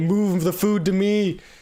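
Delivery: shouting out. Player voicing a character who can't reach his workstation, yelling to another. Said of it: "he yells out to this guy".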